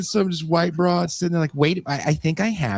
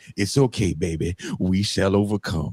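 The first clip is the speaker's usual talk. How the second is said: put-on elderly American mother-like woman voice; 9 semitones lower than usual.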